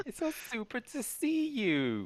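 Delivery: very high, swooping, sing-song effeminate snake voice. Voicing a snake who welcomes players to help rearrange the storeroom: effeminate snake character voice. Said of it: "he says".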